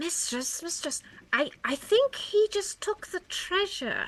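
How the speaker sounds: hushed, very quiet, barely-there whisper. Voicing Frogor telling the mistress about the treasure: whispering very quietly. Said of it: "Frogor whispers very, very quietly".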